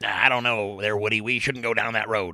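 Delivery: cartoon toy dog sidekick character voice. While discussing an actor's character voices, a speaker slips into a Slinky Dog voice. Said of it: "that was Slinky Dog".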